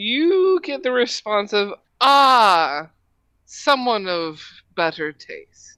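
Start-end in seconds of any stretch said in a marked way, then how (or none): 2.0-5.8 echoing dragon statue voice, drawn-out "ah". Voicing a bronze dragon statue that answers a bow: echoing statue voice. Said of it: "It just echoes".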